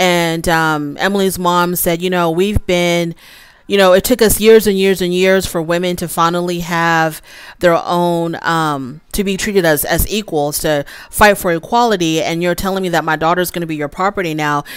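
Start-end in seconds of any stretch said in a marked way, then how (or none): none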